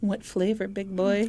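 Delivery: put-on, mock-flirty voice. Acting out her reply to his pie line, in a mock-flirty voice. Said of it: "when I do the flirty voice".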